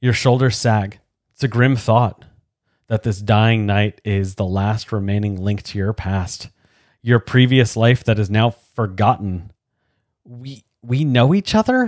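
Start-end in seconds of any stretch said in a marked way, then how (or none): 10.2-11.9 halting, unsure, slow, hesitant voice. Speaking to the dying knight, a hesitant question. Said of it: "You ask hesitantly".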